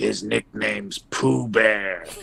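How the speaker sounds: acted, fake stage whisper. Retelling how his coach leaned over at the fight, acting out a pretend whisper. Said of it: "He was pretending like he was whispering".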